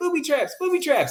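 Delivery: very high, piping put-on voice. Describing someone who still has a high-pitched voice, quoting him: high-pitched put-on voice. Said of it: "he still has that high pitched voice".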